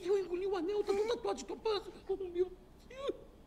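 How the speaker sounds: sobbing, tearful crying through the words. A patient tells the doctor what he swallowed, crying. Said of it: "Você tá chorando que engoliu o anel?".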